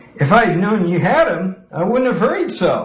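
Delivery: bright cheerful voice. A man speaks to his enraged grandmother, cheerfully. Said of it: "he said cheerfully".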